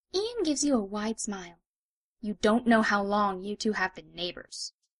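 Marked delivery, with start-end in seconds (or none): 2.2-4.8 displeased, annoyed tone. Narrator tells the listener about a neighbor, Ian; displeased.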